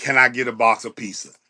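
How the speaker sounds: put-on speaking while laughing. Retelling how the new youngin asked, imitating someone laughing while asking. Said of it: "and he's laughing, and he's saying".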